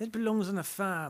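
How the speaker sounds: put-on British accent. Joking about posh British views on dogs: bad English accent. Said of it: "we're usually good at English accents".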